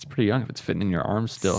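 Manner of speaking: ordinary talk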